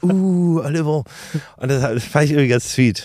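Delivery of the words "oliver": name drawn out long and high. Retelling how someone praised oliver after a hit: drawn-out 'oliver'. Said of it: "so ganz langes".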